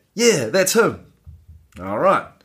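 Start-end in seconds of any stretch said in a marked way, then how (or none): 0.2-1.1 half-shouted, pitched-up delivery. Retelling what a mate half shouted back about a robber, imitating a half shout. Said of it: "half shouts back".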